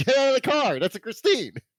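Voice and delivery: high, rising mock yell. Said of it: "I kept yelling at my screen".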